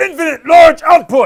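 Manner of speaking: booming, high-pitched, very loud shrill yell. A lecturer explaining transmissions: shouting.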